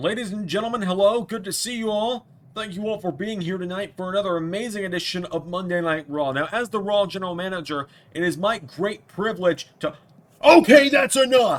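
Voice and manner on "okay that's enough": very loud, high-pitched yelling. Cutting off an interruption during the general manager's announcements: yelling. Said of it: "I'm yelling near you".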